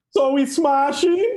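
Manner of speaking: botched Dutch accent, very high-pitched. Joking about a Dutch news story: bad attempt at Dutch accent. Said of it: "Is that Dutch?".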